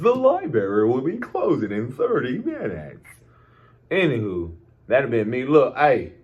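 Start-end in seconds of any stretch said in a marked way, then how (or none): 0.0-3.0 sing-song PA announcer voice. After hearing the library closing announcement, the speaker mimics it: library announcement voice. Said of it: "I love when they put on the voice".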